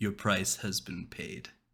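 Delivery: soft, hushed, close-up whisper. A game master voices a warlock patron reviving a player's character, whispering. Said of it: "he whispers into your ear".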